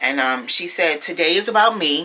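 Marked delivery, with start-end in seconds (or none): none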